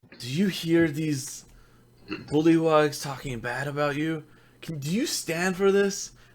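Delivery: quiet, persuasive, coaxing tone. Player voicing a character trying to persuade someone, persuasive. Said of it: "he's gonna try to persuade him and be like".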